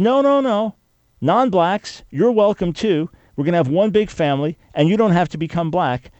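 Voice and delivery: high, eager, welcoming voice, speeding up midway. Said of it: "And now he says".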